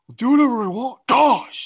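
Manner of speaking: very high-pitched character voice. Speaker shows how they used to do his voice: impression of a movie character. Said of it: "I did his voice like crazy".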